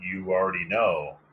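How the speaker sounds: strange, weird, unnatural-sounding voice. Speaker retelling how a man answered their questions: imitating a weird voice. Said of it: "in this weird voice".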